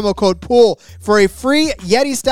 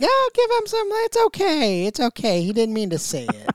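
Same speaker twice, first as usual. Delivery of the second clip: put-on soft, hushed, sing-song grandma voice; 4 semitones higher, 6 dB quieter than usual. Speaker acting out grandma's reply to grandpa, grandma impression. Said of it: "grandma and grandpa impressions by [name]".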